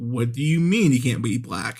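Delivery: ordinary delivery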